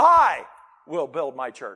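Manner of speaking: the word "I" given stress.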